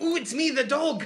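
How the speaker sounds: very high, loud, badly done cartoon voice. Showing how their dad impersonates anyone, a bad Ren impersonation. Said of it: "just a really bad Ren impersonation".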